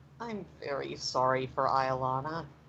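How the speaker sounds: said quietly. A storyteller voices a character's apology, quiet. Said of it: "Leilani just quietly says".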